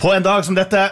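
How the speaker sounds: high, lifted, bright på en dag som dette. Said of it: "jeg kunne faktisk funnet på å sagt".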